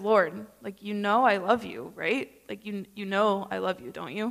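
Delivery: sorrowful, grieving pleading tone full of shame. Discussing today's Bible reading, the speaker acts out Peter's plea to the Lord: voicing Peter's grief and shame. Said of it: "You can feel the tone shift".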